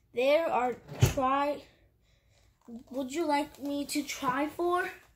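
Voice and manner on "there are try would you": ordinary delivery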